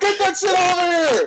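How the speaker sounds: put-on very high-pitched hollered yell. Recounting a guy warning them about their trailer on the parkway, retelling a man's yell. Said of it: "He's like yelling to us".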